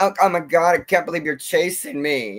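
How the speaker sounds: put-on fright, whiny, crying scared voice. Mocking how her acting afraid comes out: imitating a whiny scared voice. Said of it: "comes out more like a whine".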